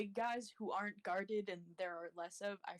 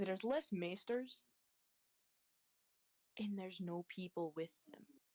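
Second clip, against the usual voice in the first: kept-down, secretive, confiding, low voice. Not wanting others to hear, she gets nearer to Kraz and speaks in a lowered voice. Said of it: "she low kind of like lowers her voice".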